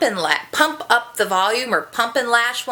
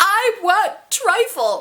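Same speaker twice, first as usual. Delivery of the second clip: mock crying, pitched higher; 9 semitones higher than usual. Telling about a day when nothing was right, retelling crying for trifle. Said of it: "I'm crying".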